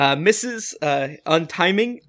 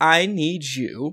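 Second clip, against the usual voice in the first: normal talking voice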